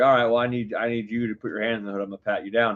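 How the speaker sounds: normal talking voice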